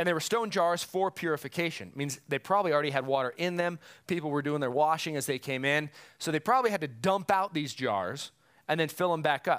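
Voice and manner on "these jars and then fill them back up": normal talking voice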